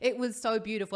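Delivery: ordinary talk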